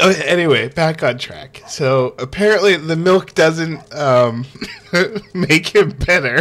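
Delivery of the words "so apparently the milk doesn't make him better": words breaking up with helpless laughter. Retelling the story of a game, laughing while talking. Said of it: "I can't stop laughing".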